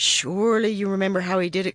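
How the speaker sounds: ordinary delivery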